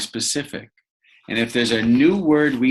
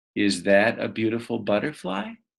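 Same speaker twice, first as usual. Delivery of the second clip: pitch climbs at the end on butterfly; 3 dB quieter than usual. Explaining that the voice goes up at a question mark: rising pitch on butterfly. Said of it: "our voice goes up in a question".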